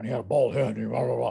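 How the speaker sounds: mock rough tough-guy voice. Voice actor recalling playing the school bully, doing Yutaka Takanuchi bully voice. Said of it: "he talked like this".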